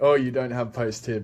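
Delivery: put-on little chuckle while speaking. Retelling how he answered a question about a tendon: mimicking a chuckling remark. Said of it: "Like with a little chuckle on his face".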